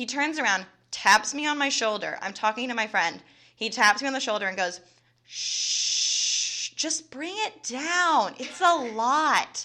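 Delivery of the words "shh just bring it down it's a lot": mock, very slow, patronizing, condescending shush. Retelling what a man who tapped her shoulder at her desk said; mock-condescending shushing. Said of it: "That's so condescending and rude".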